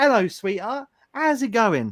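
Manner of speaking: put-on East London Cockney accent, H sounds dropped. Imitating a nan from East London greeting someone, Cockney accent, dropped H's. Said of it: "she's like Cockney, ... So like you just cut out the H's".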